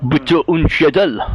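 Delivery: foreign accent that comes out sounding French. Guessing at a written foreign phrase, the speaker says it in a French-sounding accent. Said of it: "sounds- sounds French".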